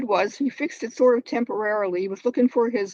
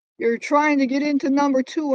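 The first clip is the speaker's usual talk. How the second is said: put-on raised, loud shouting voice; 4 semitones higher, 4 dB louder than usual. Retelling to a judge what a tenant yelled: imitating someone yelling. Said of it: "she yelled at me".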